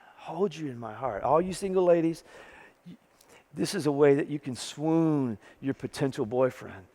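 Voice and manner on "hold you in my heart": low, much softer, tender heartfelt murmur. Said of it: "listen to the emotion of this".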